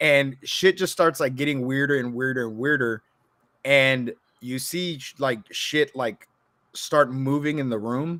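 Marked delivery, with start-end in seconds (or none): none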